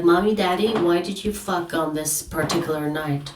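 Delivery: put-on small child's voice, rising tone. Joking about asking your parents a question: acting as a child asking parents. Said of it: "It's like".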